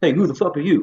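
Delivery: confronting Italian tough-guy tone. Retelling an audition where Viggy, Tommy's assistant, confronts him, imitating Viggy. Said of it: "big Italian guy's like".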